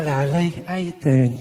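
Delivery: thick, low Cockney, chummy yet threatening. Imitating how cockney speakers greet you, in a friendly but menacing cockney accent. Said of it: "I love it when someone's got that Cockney accent".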